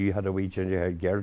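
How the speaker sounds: ordinary talk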